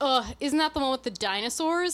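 play-acted contemptuous, dismissive, disgusted scoffing ugh. Recounting a woman dismissing the natural history museum: imitating a disgusted scoff. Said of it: "she scoffed and just goes".

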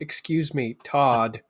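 commanding, authoritative woman's voice. Demonstrating the voice that would get todd's attention, in an authoritative woman's voice. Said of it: "So it's just like an authoritative woman's voice".

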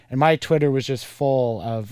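normal talking voice

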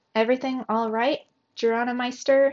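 ordinary delivery

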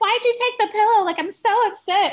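very high, loud put-on cute voice. Retelling her complaint about the speaker taking the pillow, in a cute voice. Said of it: "in this cute voice".

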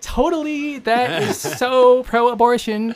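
put-on valley girl impression. Caricaturing bishops' press releases, speaker mimics them in a mock Valley Girl voice. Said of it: "Why do they sound like Valley Girls?".

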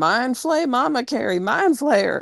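put-on, high, frantic screaming. Retelling what was yelled while watching the film: imitating own screaming. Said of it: "And I'm over here screaming".

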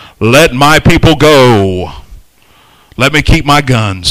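very deep, stoic voice with "go" stretched. Joking about how Moses must have sounded, quoting him in a stoic deep Moses voice. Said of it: "The stoic deep voice".

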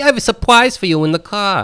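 mock voice, high and sweet.

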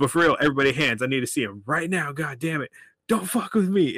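mild yell. Retelling a security guard screaming at everybody in the theater; imitating a guard screaming. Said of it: "just screaming at everybody in the theater".

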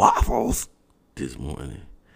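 loud, swooping, impersonated donkey bray. Host still on vacation jokes with listeners traveling to work: donkey impersonation. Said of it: "That was my donkey impersonation".

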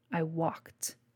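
dismissive, scornful scoff. A man, asked how he got into a bolted room, answers scoffing. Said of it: "The man scoffed".

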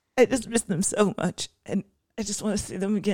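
high, sobbing voice, crying while talking. Speaker addressing listeners after being teased about crying, sobbing. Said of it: "sobbing right now".

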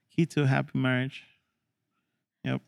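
unenthusiastic, unhappy-sounding tone. Agreeing that a happy wife is key to marriage, not sounding happy. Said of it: "you don't sound very happy about it".

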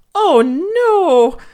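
very high frightened cry, no stretched. A brother looks out the window at a late knock and cries out, shaking with fright. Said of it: "cried Gary, shaking with fright".

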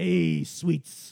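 put-on creepy, raspy, loud New York old man voice. Retelling hearing someone call to them, the speaker acts out the call: creepy New York old man voice. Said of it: "like some sort of creepy, like, New York old man".

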